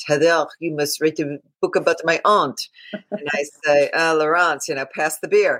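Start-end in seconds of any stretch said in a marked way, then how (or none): 0.1-2.6 put-on fast, heavy Parisian accent, laid on thick. Retelling what Laurence says to her every summer on the beach: thick Parisian accent. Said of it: "in her thick Parisian accent".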